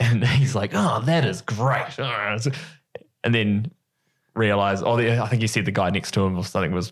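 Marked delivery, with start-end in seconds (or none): 0.7-2.0 put-on American accent. Retelling what a man said on a flight, in an American accent. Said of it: "You make a pretty good American accent".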